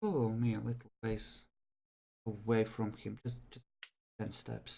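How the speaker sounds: very quiet, low, secretive half-whisper. With another man standing right there, he leans in and half-whispers. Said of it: "he leans in and whispers".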